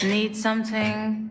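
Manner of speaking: bored, uninterested tone. Asking a visitor at the general store what they need: bored. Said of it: "you sound really bored".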